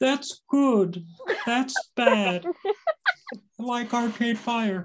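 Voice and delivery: frog puppet voice, pitched very high. Mimicking a man who is said to speak like a puppet, in a Kermit the Frog voice. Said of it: "You have to do a Kermit voice".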